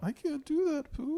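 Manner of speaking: very high, slow, whiny voice. Joking about Winnie the Pooh characters, playing Piglet: whiny complaining Piglet voice. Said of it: "He's got a whiny, complainy voice".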